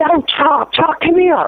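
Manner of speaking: loud scream. Retelling seeing a frozen screen with own photo: retelling own screaming. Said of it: "And I'm screaming".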